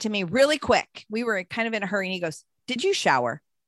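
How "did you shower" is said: pointed, accusatory delivery. Retelling a quick question from her husband in the bathroom: imitating an accusing question. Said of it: "And he said it like that".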